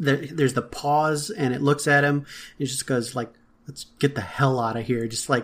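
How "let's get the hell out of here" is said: play-acted weary, sorrowful, frustrated, sad tone. Retelling the captain's final line at the end of the episode: imitating a frustrated, sad line. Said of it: "so much frustration, so much sadness".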